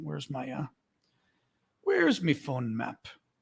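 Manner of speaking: put-on sing-song Irish brogue. Looking for a map on the phone, joking: fake irish accent. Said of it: "My fake Irish accent".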